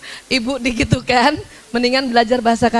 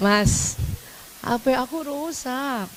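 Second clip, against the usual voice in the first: spoiled, pampered, very slow, ringing coaxing; 7 dB quieter than usual. Showing wives how to ask a husband for help, a bit coaxing and shrill. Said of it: "agak manja dan nyaring".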